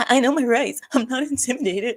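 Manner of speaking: play-acted quavering, wobbly, shaky, trembling voice. Commenting to viewers, the speaker mimics the man behind the door: mocking a shaking voice. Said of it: "His voice is like".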